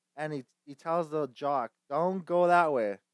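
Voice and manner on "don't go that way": put-on British accent, not Irish. Retelling a talking cow warning a jock: put-on british accent. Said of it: "an British accent, not Irish".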